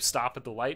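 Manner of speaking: normal talking voice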